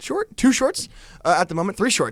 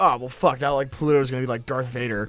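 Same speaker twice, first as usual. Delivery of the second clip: plain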